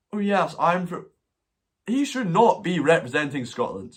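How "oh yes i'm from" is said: mock silly little voice, pitched higher. Mocking the actor who should not represent Scotland: mocking Sam Heughan's silly little voice. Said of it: "I can't impersonate his silly little voice".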